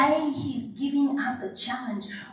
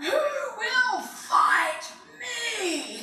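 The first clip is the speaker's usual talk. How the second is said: put-on very high giant bellow, drawn-out "me"; 10 semitones higher than usual. Telling of being terrified, a speaker acts out the giant calling out: bellowing giant voice. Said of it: "he bellows out".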